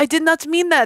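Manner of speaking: very high-pitched French guy voice. Retelling what a French ex said after calling her fat: imitating a French guy. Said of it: "I dated a French guy".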